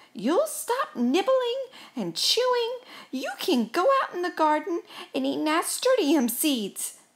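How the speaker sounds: high, firm, loud shouting. Laying down rules to a mouse staying in the house, shouting. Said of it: "shouted Gus".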